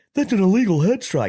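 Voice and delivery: very high-pitched, a bit loud, mocking commentator parody. Retelling a mocking voice note about a fight commentator: mocking imitation of Joe Rogan. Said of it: "making fun of Rogan for being like".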